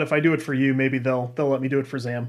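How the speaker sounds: usual speaking voice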